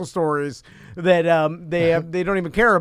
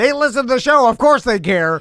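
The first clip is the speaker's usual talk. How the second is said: play-acted mock scream, put-on yell, much higher; 6 semitones higher, 6 dB louder than usual. Describing an awkward bit planned for show listeners, acting out a scream. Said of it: "Then I'll scream".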